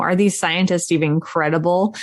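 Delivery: ordinary talk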